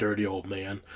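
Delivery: put-on muttering under breath. Retelling what a mother said about a game show host: imitating muttering under the breath. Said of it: "the mother saying under her breath".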